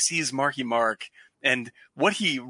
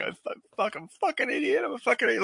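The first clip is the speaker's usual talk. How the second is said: acted, tearful, very high, sobbing crying voice; 11 semitones higher than usual. Retelling a movie scene where the character breaks down: imitating crying. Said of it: "he just starts crying, saying".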